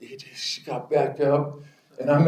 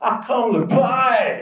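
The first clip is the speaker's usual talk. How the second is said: yelled, very high put-on Oklahoma drawl; 10 semitones higher than usual. Retelling what the guy across the line of scrimmage yelled at him, Southern Okie drawl. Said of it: "he had this real Southern Okie drawl".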